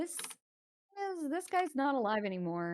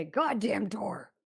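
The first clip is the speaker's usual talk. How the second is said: loud put-on grumbling troll voice; 5 dB louder than usual. Voicing a troll behind a squeaking door: troll voice. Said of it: "you hear a troll from the other side say".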